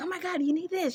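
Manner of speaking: mock frantic, very high, panicked freak-out. Retelling her mother's reaction when her water broke, imitating her mother panicking. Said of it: "she starts freaking out".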